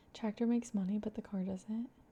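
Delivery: hushed, half-whispered aside. Speaker talking about snow and ice in Texas, half-whispering an aside. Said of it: "I don't know why I'm whispering that".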